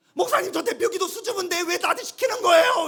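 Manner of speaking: acted indignant, angry, very high-pitched and loud. Acting out a shy church member complaining to the pastor: imitating someone getting angry. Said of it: "왜 화를 내시는 거예요?".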